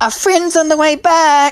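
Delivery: very high-pitched, loud yelling out. Voicing a character calling to the party: Kyra yelling out. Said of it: "you just hear Kyra yelling out".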